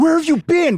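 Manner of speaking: yelled voice. Retelling how the older women greet you at the store: imitating someone yelling. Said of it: "why are you yelling at me".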